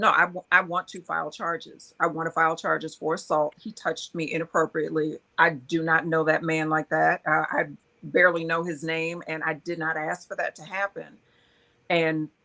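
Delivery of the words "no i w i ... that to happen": ordinary talk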